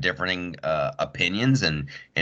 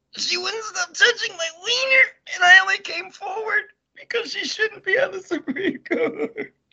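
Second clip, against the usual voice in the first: fake holding back tears, mock tearful, higher pitch. Acting out a made-up party story as a joke testimony: mock tearful testimony. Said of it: "I'm trying not to cry".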